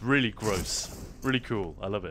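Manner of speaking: normal talking voice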